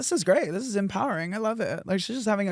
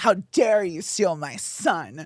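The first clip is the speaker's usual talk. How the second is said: mock disgusted, judgmental tone; 2 semitones lower, 3 dB louder than usual. Retelling how boyfriends' moms react to the speaker: imitating moms' disgust. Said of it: "it's just disgust".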